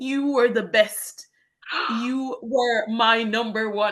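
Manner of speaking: trembling, faltering English. Recalling a farewell, speaker quotes a tiny woman of about fifty handing her flowers, imitating very shaky English. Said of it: "she said in very shaky English".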